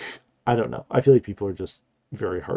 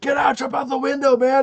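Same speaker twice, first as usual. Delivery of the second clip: mock, very high-pitched screaming yell; 3 dB louder than usual. Retelling reacting to a TV scene: imitating own screaming at screen. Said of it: "I was literally screaming at the screen".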